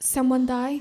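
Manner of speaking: put-on heavy Russian accent, laid on thick. Retelling a driver's question to a crying passenger: thick Russian accent. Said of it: "he has a thick Russian accent".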